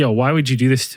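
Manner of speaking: normal talking voice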